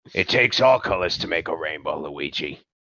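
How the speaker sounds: super gruff, deep, low growl. Joking that a character should sound like Mario: super gruff Mario voice. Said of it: "made him super gruff".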